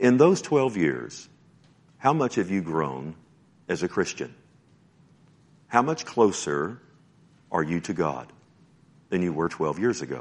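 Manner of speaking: gentle, loving, tenderly provoking tone. Speaker asks listeners a searching question, tender. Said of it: "I say this tenderly".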